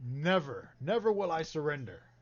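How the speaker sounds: loud yelling. Voicing a character in combat who yells back at him: yelling back. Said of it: "yells back at him".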